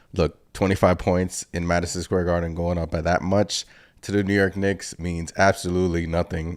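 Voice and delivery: ordinary talk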